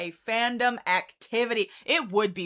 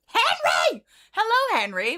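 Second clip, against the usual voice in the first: very high, swooping, excited squeal; 10 semitones higher, 3 dB louder than usual. Greeting someone who just arrived, by name: excited scream. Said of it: "I didn't mean to scream at you".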